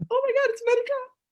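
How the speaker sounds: very high, loud, giddy schoolgirl squeal and gush. Greeting a guest and acting out own reaction: imitating a giddy schoolgirl. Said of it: "I still get giddy like a schoolgirl".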